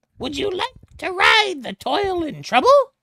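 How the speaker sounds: very high, shrill, booming, very loud friendly goblin voice. The narrator voices the goblin offering a ride, in a friendly goblin voice. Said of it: "the friendly goblin sitting in the chair".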